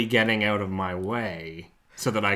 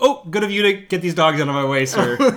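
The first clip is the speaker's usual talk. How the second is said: acted passive-aggressive politeness; 7 semitones higher, 5 dB louder than usual. Speaker acts out a remark to a man whose dogs block the way, mock passive-aggressive politeness. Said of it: "Something very passive aggressive".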